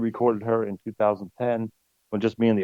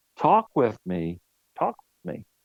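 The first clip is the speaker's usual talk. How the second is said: mock irritated, insistent, swooping delivery; 2 semitones higher than usual. Retelling what a voice next to the piano said: imitating an annoyed voice. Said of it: "Very annoyed".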